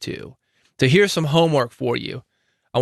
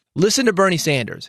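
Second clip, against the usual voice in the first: ordinary talk, nothing marked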